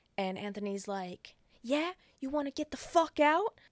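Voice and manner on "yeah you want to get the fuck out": put-on furious shout, high-pitched angry yell. Retelling a fight in a car, the speaker quotes the driver yelling back: retelling an angry yell. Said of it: "as he's yelling at her".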